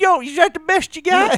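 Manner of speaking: very high, loud, defiant shout. Joking about a man in a hurricane, imitating someone yelling at god. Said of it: "He was just out there yelling at God".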